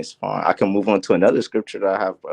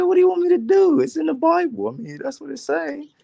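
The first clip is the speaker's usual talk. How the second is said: high-pitched voice. Retelling what the other speaker would answer about the bible: imitating the other speaker. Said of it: "He said".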